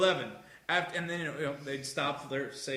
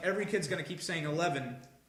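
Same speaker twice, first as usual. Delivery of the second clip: usual speaking voice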